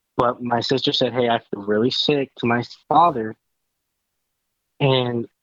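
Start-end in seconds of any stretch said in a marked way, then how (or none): none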